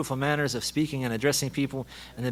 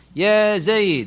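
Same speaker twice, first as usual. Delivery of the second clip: loud, high call projected across a distance; 6 semitones higher, 8 dB louder than usual. Arabic lesson on calling someone far away, name called out loudly. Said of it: "We'll raise our voice like that to get his attention and call him".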